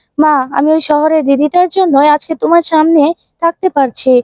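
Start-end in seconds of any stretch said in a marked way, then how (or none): none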